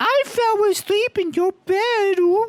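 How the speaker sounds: put-on very high, slow, cutesy baby-girl voice, squeaky.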